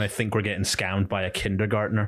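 ordinary talk, nothing marked

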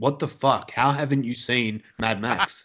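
normal talking voice

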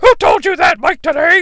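high, loud mock announcer voice. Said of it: "Schiavone's like".

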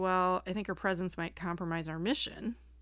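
normal talking voice

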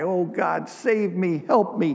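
crying out, tearful. Telling a story of a man stranded on ice: crying out for help. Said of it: "He begins to cry".

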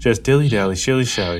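mock flat delivery with no emotion at all. Complaining about a translated show, the speaker imitates its flat, zero-emotion delivery. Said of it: "they say it with zero emotion".

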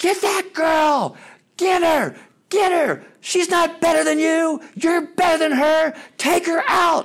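mock shrill, very high-pitched yelling. Retelling a woman among the other team's parents at the game: imitating a woman yelling. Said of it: "I hear this woman just start yelling".

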